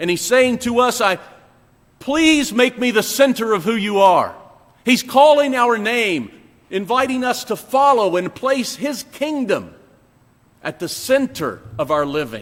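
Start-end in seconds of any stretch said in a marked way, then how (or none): 1.0-4.3 put-on pleading, loving voice, higher pitched. Voicing God calling a listener's name: imitating God's pleading, loving voice. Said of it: "in the most pleading and loving voice".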